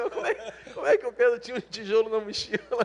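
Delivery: high, laughing delivery.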